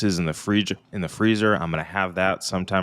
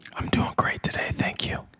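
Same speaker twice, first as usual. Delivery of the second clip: pretend whispering, quieter. Answering a co-host who asks how things are: mock whisper. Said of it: "are we whispering?".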